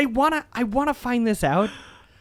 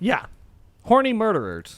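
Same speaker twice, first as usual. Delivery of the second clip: normal talking voice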